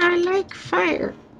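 very high talking-skeleton voice. Playing a game with friends, answering as a skeleton, skeleton voice. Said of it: "That's the best skeleton voice ever".

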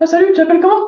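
exaggerated very high, tense, nervous, loud squeak. Coaching example of a stressed guy greeting a girl, exaggerated high, tense voice. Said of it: "ils vont dans les aigus. J'exagère, mais ça donne ça".

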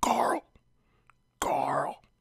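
calling out in a whisper-yell. Comparing a tame Deadpool film to a TV character, Rick Grimes whisper-yell. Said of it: "his signature whisper yell voice".

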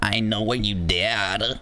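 slight American twang. Trying the line again for a partner, with a slight American twang. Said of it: "I'll put in like a little American twang in it".

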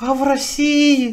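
meek, timid little voice. Retelling a questioner who asks about Russia, imitating a timid voice. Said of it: "такой робкий этот голодный голос, такой".

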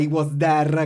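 English words in an Italian accent. Showing the Italian way of saying an English phrase: Italian accent. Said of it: "non puoi manco fare l'Italian".

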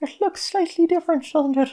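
Irish accent, pitched very high. Playing a game and talking about the redone town, in an irish accent. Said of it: "that's me Irish accent".

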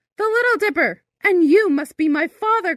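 crying out for joy, very high. Answering the tall captain who shouted back from the ship, crying out for joy. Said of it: "Cried Birdling, dancing for joy".

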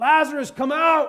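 booming, very loud, high holler. Retelling a biblical story, voicing the call at the tomb: acting out a holler. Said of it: "Jesus hollers out".

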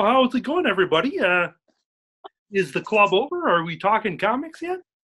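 put-on frog puppet character voice. Greeting the group as a visiting puppet guest: Kermit the Frog voice. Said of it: "Kermit the Frog is here right now".

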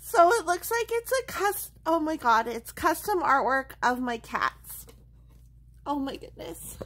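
tearful, crying while talking. Unboxing custom artwork of her cat, crying. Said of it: "because I'm crying".

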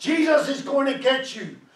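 loud, high-pitched, stretched-out scream. Recounting screaming at burglars who broke into the house, retelling a scream. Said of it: "And I kept on screaming at them".

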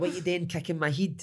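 put-on high child voice in slangy local street dialect. Retelling how a wee boy who says heed and den talks: imitating son's local dialect. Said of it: "That's what he speaks like".

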